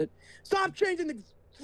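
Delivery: getting angry. Telling someone to stop changing the board, getting mad. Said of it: "ooh, I'm getting mad".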